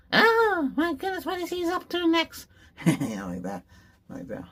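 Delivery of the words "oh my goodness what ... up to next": very high, loud put-on voice. Showing off character voices, the speaker does a next-door neighbor voice. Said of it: "I should do my next door neighbor".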